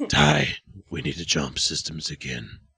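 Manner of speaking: very deep, raspy voice. Imitating Captain Adama giving an order: Captain Adama deep raspy voice. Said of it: "Captain Adama from Battlestar Galactica talking in this deep, raspy voice".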